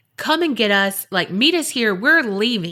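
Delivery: ordinary delivery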